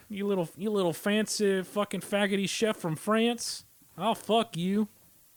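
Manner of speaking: put-on big Texan man voice. Inventing an adversary chef for the show, the speaker voices him: big Texan dude voice. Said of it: "Maybe it's a big fat Texan dude. He's like".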